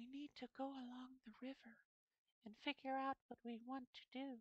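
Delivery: very high, soft, hushed anime-character voice. Showing how an anime character speaks, imitating Kyoka's voice. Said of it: "when Kyoka, the voice actress, when she speaks, she's like".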